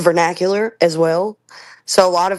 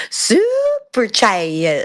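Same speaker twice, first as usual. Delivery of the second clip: put-on child's drawn-out, swooping, sing-song Southern accent; 3 semitones higher than usual. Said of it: "he'll lean into it sometimes".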